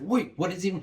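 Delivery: high, rattled, panicked voice, blurted out. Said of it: "you start panicking".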